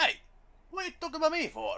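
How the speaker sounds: sudden put-on Italian accent, pitched very high. A character objects after being pointed at and talked about, in an Italian accent. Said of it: "When did you get an Italian accent?".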